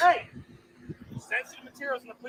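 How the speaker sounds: shrill, very loud, very high screaming. An officer confronting a man who is filming near a police car, screaming. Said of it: "why are you screaming at me?".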